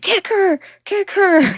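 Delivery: mock very high shrieking scream. Retelling a woman who screamed to have someone kicked, imitating someone screaming. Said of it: "she was just screaming".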